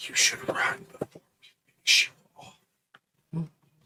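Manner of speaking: barely voiced, very soft, hushed whisper. Playing a character who looks at her, whispering very softly. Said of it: "he's going to whisper very softly".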